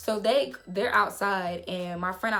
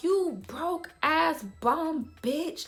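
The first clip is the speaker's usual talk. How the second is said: play-acted high, drawn-out hollering in a decrepit voice; 8 semitones higher than usual. Speaker recounts yelling from the back of the club, retelling own yell. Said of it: "I'm just like yelling".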